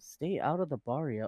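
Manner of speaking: flat, serious character voice. Quoting a roleplay character's entrance line: deadpan Bob voice. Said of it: "'cause it's so deadpan and just, like, so serious about things".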